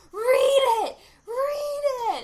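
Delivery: very slow, very loud, shrill, drawn-out high scream. Describing a film scene where a guy screams in a girl's ear, retelling a scream. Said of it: "the guy is screaming in her ear".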